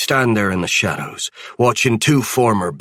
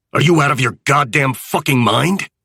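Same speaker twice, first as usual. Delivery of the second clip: higher hiss through gritted, clenched teeth; 6 semitones higher than usual. Narrator reads a man's reply to the speaker, hissed through clenched teeth. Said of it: "He hisses through violently clenched teeth".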